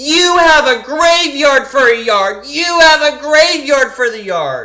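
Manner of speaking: shrieking at full volume, very high pitch. Retelling a film scene where a neighbor yells from the porch: imitating a neighbor yelling. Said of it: "comes running out and starts yelling".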